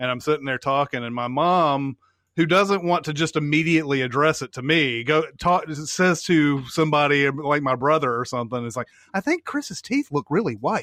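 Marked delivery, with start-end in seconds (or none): 9.1-10.8 higher-pitched stage whisper. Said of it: "It's like a stage whisper".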